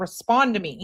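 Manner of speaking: acted-out angry insistence, mad and demanding. Mocking how he reacts in a video: imitating someone mad. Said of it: "He is so mad".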